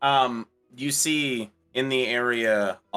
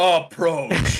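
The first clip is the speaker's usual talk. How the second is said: mock-commanding voice, louder; 6 semitones higher, 4 dB louder than usual. Acting out speaking to a goblin, in a mock-commanding voice. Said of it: "you have to say it in a commanding voice".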